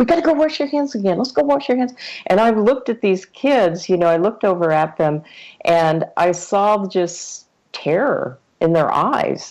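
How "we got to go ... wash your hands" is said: very high, panicky, frantic, rushed fussing. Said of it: "totally freaking out".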